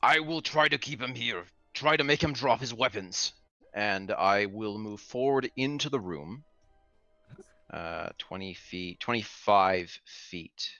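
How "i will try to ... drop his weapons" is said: mild call across a distance. Turning to yell to Ulysses in character: yelling to an ally. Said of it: "turn and yell to Ulysses".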